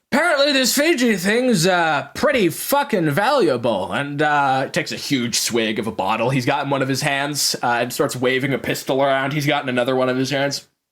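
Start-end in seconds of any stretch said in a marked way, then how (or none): 0.1-3.9 high-pitched, hollering, yelling thug voice. Narrating a game scene, voicing the man at the front yelling at his group: yelling at his gang. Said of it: "yelling at the rest of the people".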